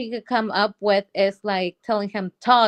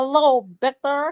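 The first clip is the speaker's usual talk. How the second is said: put-on puppet character voice; 4 semitones higher than usual. Imitating the puppet's voice from a show flashback: imitating the puppet's voice. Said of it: "that voice, like".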